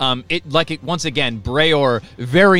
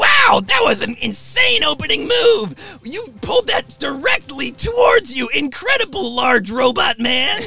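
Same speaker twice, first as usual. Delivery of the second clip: very high, hyped, excited arena announcer voice. Voicing an announcer calling a fight in the Colosseum, in an arena announcer voice. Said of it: "a wand pressed to her throat as she starts to".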